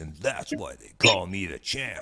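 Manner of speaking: deep put-on radio fighter voice. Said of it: "you're using a deep voice like Johnny".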